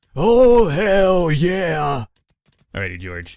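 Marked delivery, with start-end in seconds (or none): 0.1-2.0 very loud, high, full-blast wrestler bellow. Joking about a bald game character: terrible Stone Cold Steve Austin impression. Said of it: "that was a terrible Stone Cold impersonation".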